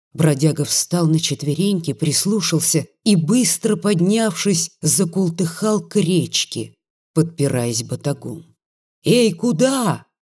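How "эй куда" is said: high calling out. Narrator reads Grigory calling after the tramp hobbling to the river, shouting after him. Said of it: "крикнул ему вдогонку Григорий".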